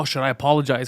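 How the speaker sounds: ordinary delivery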